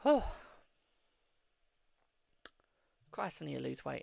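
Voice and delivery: short of breath, winded. Speaker addressing viewers after talking a lot and very quickly, out of breath. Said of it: "out of breath".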